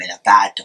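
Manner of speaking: low, authoritative, commanding scolding tone. Showing how a low voice sounds to a dog: low commanding voice. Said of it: "Low is very commanding and authoritative to dogs".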